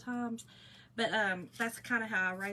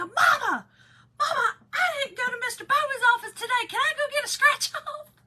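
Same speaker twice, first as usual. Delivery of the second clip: put-on loud, high-pitched child voice hollering; 12 dB louder than usual. Retelling how the son called out from the car: imitating son calling out loudly. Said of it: "and he'd do it loud".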